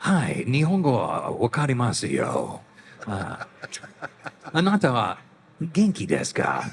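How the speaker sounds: character voice in Japanese, pitch swooping and swinging. Answering a fan's request to speak Japanese: Snake's voice in Japanese. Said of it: "say something in Japanese in Snake's voice".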